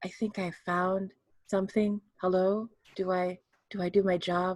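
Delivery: mild, soft, gentle, soft-spoken voice. Retelling looking around and speaking up, in a really soft voice. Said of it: "in a really soft voice".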